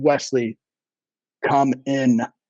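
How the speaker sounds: deep, croaking voice. Retelling what a woman said to Wesley with a dead stare: low croaky voice. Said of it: "with this low, croaky voice".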